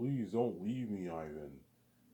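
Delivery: put-on crying, loud, slow, tearful. Imitating her pleading with ivan not to leave: imitating someone crying and pleading. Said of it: "That's why she cries".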